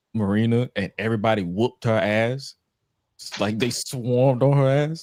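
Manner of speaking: usual speaking voice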